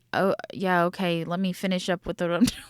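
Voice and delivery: put-on nonchalant, unbothered tone. Retelling a call from a police car: imitating Wade's nonchalant tone. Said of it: "he seems very nonchalant".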